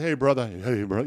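friendly, put-on famous celebrity voice. Retelling a greeting from someone met in a men's room: Shaq voice. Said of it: "You know, that voice".

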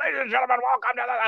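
dramatic high-pitched wrestling ring announcer voice. Mocking wrestlers who switch into a voice for the recording: imitating a ring announcer voice. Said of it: "Talk in your voice".

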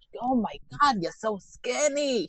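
put-on Yonkers accent. Retelling what a man said about the speaker coming back thin, put-on Yonkers accent. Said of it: "He's, like, from Yonkers. That's why I'm trying to imitate him".

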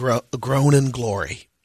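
ordinary talk, nothing marked

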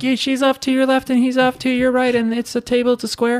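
very high-pitched yell. Imitating podcast listeners yelling out a description of the table: imitating listeners yelling. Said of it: "And they yell like".

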